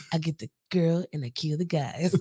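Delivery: put-on raspy voice. Quoting a Robot Chicken bit: Keanu Reeves impression. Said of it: "I could do it now 'cause I have a raspy voice".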